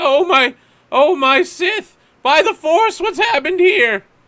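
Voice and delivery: very high, loud voice, crying through the words. Game master voicing a man who pushes past the players, crying character voice. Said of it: "you can see he's crying".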